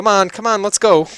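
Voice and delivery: very high, very loud elven woman voice. Narrating to the players, voicing a female elf behind them, female elven voice. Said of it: "a female elven voice behind saying".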